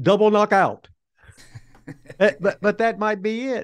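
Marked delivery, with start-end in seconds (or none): 0.0-0.9 put-on French Canadian accent, higher. Quoting an older partner's only words in the ring, French Canadian accent. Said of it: "in his French Canadian accent".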